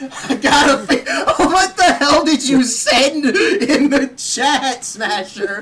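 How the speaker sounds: high, loud laughing talk.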